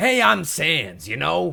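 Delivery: loud, swooping, drawn-out New York accent. Describing disliked takes on a character voice: Sans with a New York accent. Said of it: "the whole New York accent type thing".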